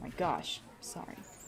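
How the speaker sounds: ordinary talk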